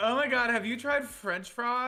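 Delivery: put-on vapid Valley Girl voice, very high and loud. Inventing a character with others, the speaker voices her: put-on Valley Girl voice. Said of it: "like it's a Valley Girl".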